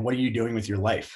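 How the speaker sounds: put-on crying voice. Retelling how a cop read about him and cried: imitating a cop crying. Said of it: "he starts literally crying".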